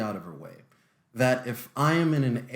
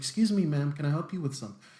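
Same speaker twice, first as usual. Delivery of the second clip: mild, unthreatening, a little softer and gentle; 3 semitones higher than usual. Showing the different voice adopted to seem less dangerous: a little bit softer voice. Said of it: "I'll sound a little bit softer like this".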